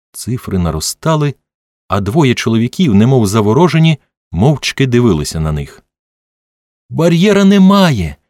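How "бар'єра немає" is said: very high, jubilant, joyful shout. Watching the numbers climb, one of two men shouts out, a joyful shout. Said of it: "радісно закричав Твісел".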